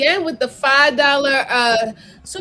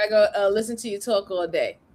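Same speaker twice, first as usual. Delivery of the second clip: ordinary talk, nothing marked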